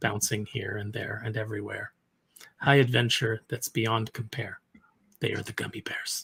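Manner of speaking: very quiet, low, flat, unexcited monotone. Imitating how someone used to read something aloud, in a flat monotone. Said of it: "he would just read it in his monotone".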